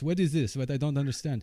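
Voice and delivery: fake, put-on Russian accent. Playing an imagined alien confused on Earth, in a put-on Russian accent. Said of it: "I'm going to make a Russian voice".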